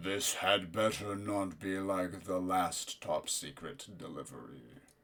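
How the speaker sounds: incredibly deep, loud, booming rumbling voice. Game narrator voicing someone heard as the door opens, incredibly deep, loud rumbling voice. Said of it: "a rumbling voice, incredibly deep and loud".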